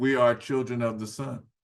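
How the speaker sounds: usual speaking voice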